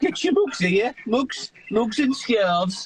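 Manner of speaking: put-on Birmingham accent. Showing off accents, the speaker imitates a stall seller in a Brummie accent. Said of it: "obviously Brummie accent".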